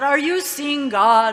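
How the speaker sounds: big, resounding, booming voice, loud. Retelling a story, the speaker quotes a flamboyant hippie's question in a booming voice. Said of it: "with a very booming voice".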